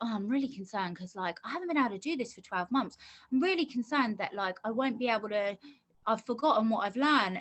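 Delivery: plain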